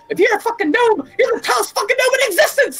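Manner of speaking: acted-out angry scream. Recounting a game exchange, acting out him yelling at the dm: retelling an angry scream. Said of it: "him just screaming at our D M".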